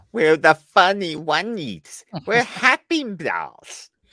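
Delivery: put-on high, loud, sing-song, babyish doll voice. Quoting a line from the episode being discussed: imitating a baby voice. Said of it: "you knew the baby voice was coming out".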